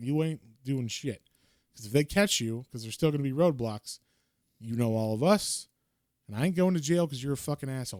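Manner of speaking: mock mad, heated, laying-down-the-law tirade. Retelling a character's angry words in a story: imitating an angry character. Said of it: "Paulus is kinda mad".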